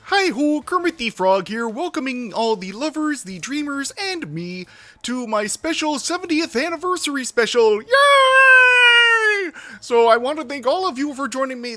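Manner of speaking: yay drawn out at very high pitch. Opening a video as a joke: Kermit the Frog voice. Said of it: "I think this bit has already gone far enough".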